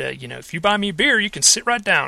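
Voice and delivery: put-on warm, beautiful-sounding Texas accent. Speaker recounts a man inviting him to sit down, in a Texas accent. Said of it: "in his beautiful Texas accent".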